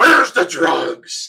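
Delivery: very loud, rough growl. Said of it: "That whole thing that he does with the growl".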